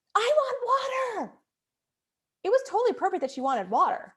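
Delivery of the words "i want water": put-on shrill, very high child's screaming voice. A parent retells her oldest daughter screaming at her in the kitchen, imitating a child screaming. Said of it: "She would scream to me".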